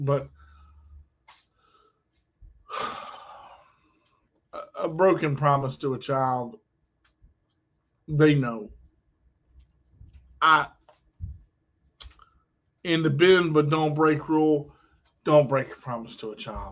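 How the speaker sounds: choked-up emotional voice. Explaining why promises to children matter, getting emotional. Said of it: "I don't wanna get emotional here".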